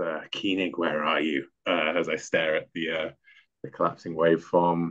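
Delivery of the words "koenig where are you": whispered under breath, much quieter and lower. Walking through the lab, the speaker calls out for someone, whispering under breath. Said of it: "I whisper under my breath".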